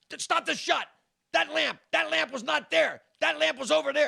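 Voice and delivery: very high-pitched, shrill, ragged, raspy screaming fit. Retelling a coked-up man stopping the shot: imitating someone screaming. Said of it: "And he starts screaming".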